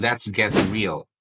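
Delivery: ordinary talk, nothing marked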